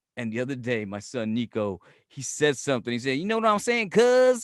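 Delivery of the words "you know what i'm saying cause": borrowed Southern way of talking. Retelling a son saying something new: imitating son's Southern talk. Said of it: "That's Southern shit".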